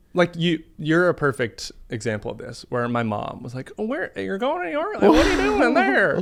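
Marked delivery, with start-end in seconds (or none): 3.8-6.2 high, loud, put-on Southern accent. Retelling what mom asked about going to New York: Southern accent imitating mom. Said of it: "I just gave her a Southern accent".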